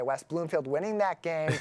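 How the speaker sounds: ordinary talk, nothing marked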